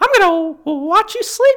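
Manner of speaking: very high, loud, squeaky voice. Speaker shows what they say to their kids, in a Mickey Mouse voice. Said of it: "will just do things that Mickey would never say".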